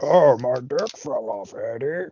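put-on monster voice. Joking about a movie, the speaker voices a line for Venom: Venom voice. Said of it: "He talks like this".

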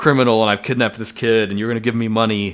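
ordinary talk, nothing marked

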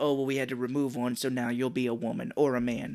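ordinary delivery

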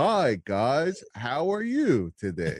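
very slow, swooping fake American accent. Showing how they might sound on a stream, fake American accent. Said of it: "Be like the fake American accent".

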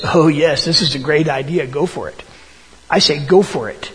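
mock sarcastic tone. Retelling a prophet's reply to the kings: imitating a sarcastic reply. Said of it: "sarcastic statement".

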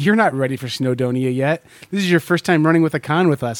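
ordinary talk

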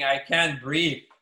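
ordinary delivery

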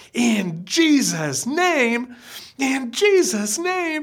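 shrill, angry outcry, rising in pitch. Retelling a voice crying out from the back of the room after a prayer: retelling an angry shrill cry. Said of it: "this angry, shrill voice that cried out".

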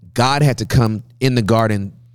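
ordinary talk, nothing marked

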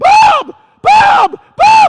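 full-throated, very loud, high-pitched repeated screaming. Behind shut doors, calling to the custodian wearing headphones: re-enacting screaming a name. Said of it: "And I'm screaming".

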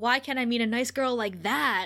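acted sarcastic delivery. Recounting a scene, acting out a character's line: mock-sarcastic retelling. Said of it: "so sarcastically".

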